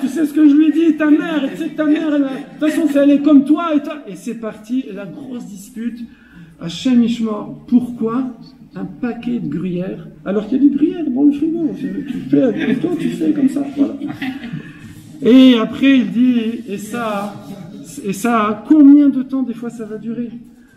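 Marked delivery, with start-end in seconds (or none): 0.0-4.0 high, loud, angry voice. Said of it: "Elle, elle répond".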